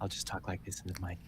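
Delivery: gentle, soft ASMR half-whisper. Talking softly into the mic for a joke: ASMR-style half-whisper. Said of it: "A S M R".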